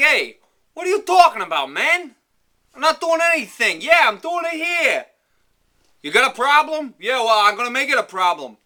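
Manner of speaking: very high-pitched, loud New York accent. Showing how talking like someone from New York sounds: New York accent. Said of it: "If I'm talking like I'm from New York".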